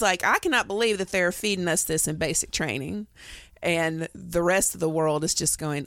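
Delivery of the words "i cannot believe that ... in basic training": ordinary delivery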